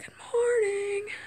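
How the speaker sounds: voice cracking into a very high break. Signing off a short video to viewers, voice cracking. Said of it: "That was a really bad voice crack".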